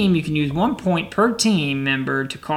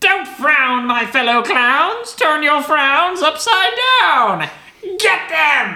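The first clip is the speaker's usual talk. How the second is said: high-pitched, cackling clown voice; 11 semitones higher, 3 dB louder than usual. Game narrator voicing a clown who turns toward the players, cackling clown.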